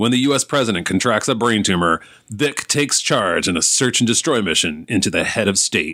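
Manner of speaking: dramatic movie-trailer announcer voice. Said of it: "in his announcer voice".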